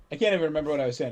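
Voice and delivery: ordinary talk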